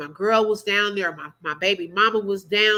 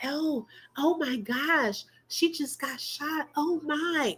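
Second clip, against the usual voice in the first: soft, slow, high-pitched whisper; 6 semitones higher, 8 dB quieter than usual. Mocking the demand that everyone stay quiet: mock whisper. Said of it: "You want everybody to whisper, be quiet".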